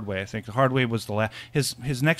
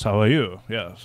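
put-on Indian accent with British tones; 3 semitones lower than usual. Joking about how Indians really sound, the speaker demonstrates: British-accented Indian voice. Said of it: "they usually have British accents and they sound like this".

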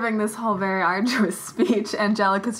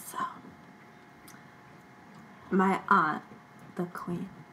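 speaking too softly, lower and quieter; 4 semitones lower, 10 dB quieter than usual. Speaking in character about an aunt, the queen: very quiet character voice. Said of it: "I literally can't hear you".

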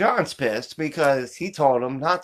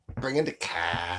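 very low, hushed, put-on Boston accent; 9 semitones lower, 7 dB quieter than usual. Asked about the accent, speaker repeats the character's line, boston accent. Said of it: "It's Boston".

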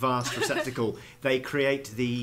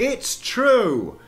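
raised voice, very high in pitch; 11 semitones higher, 7 dB louder than usual. Narrating as Marisa addressing the whole town: raised voice. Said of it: "Marisa raises her voice and goes".

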